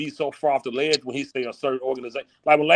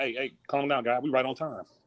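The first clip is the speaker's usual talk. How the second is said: soft, easygoing, unbothered, calm as ever; 7 dB quieter than usual. Imitating a friend calming everyone down: imitating Eighty, calm as ever. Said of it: "eighty hop on this calm as ever".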